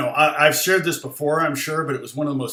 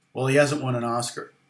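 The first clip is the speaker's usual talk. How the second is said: put-on completely serious deadpan tone. Retelling a mother's reply about her son's awards: mock-deadpan. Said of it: "With deadpan face, completely serious".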